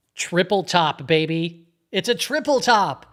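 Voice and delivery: loud, drawn-out, jokey, sarcastic cheer. Joking about a chart pattern while watching it: sarcastic, joking. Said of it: "I'm being sarcastic there".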